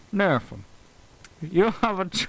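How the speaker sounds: put-on strange mobster accent. Doing the voice of a mobster character, strange mobster accent. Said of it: "this is what the mobster sounds like".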